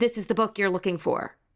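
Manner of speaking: ordinary talk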